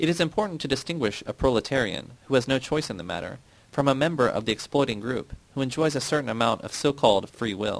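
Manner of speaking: plain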